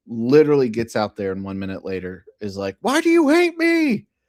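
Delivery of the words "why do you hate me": mock dog scream, higher and louder. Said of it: "screaming at me to come back in".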